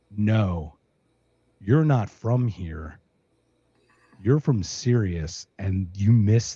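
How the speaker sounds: very low, utterly flat, dead-level deadpan. Telling a story, acting out a man who looks up at the speaker, retelling a deadpan line. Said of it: "He looks up at me deadpan".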